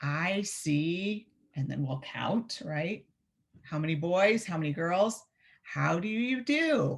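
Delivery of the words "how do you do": rising intonation, higher and slower. Showing how to teach children a morning greeting, in a questioning rising voice. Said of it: "a questioning voice. You go up at the end".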